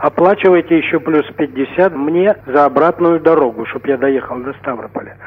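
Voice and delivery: normal talking voice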